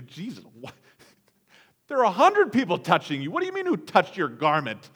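loud, swooping, mocking sarcastic tone. Speaker acts out the disciples' reply to the question; retelling a sarcastic retort. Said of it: "They sarcastically respond to him".

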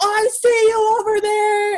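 loud, very high, slow, drawn-out yelling. Retelling what a man at a protest yelled: imitating a man yelling. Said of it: "one of the guys started yelling at me".

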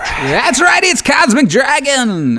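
very high, heavy metal stadium-show arena voice. Podcast host opens the episode in a heavy metal arena voice. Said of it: "I came out with a heavy metal arena voice".

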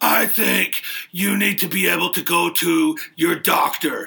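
rough, creaky voice blending two men's voices. Speaker challenges people at home to tell whom he imitates: impression meant as two men. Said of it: "I do a really good impersonation of both of them".

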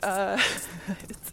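words laughed through nervously, breathless.

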